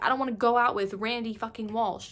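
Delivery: ordinary talk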